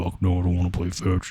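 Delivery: soft voice at the deepest pitch. Retelling a guy's reply after being asked to play fetch, very deep Mufasa-like voice. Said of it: "he had the fucking deepest voice I've ever heard".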